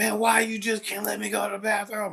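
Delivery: mock, shrill, very high screaming. Retelling a student's demand to use the bathroom: imitating a student screaming. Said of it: "screaming and jumping in my face".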